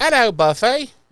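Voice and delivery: very high-pitched, put-on British English accent. Retelling a scene where Mama Joyce greets Buffy: put-on English accent. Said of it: "are you English now?".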